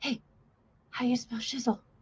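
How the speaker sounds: put-on quick Spanish-accented speech.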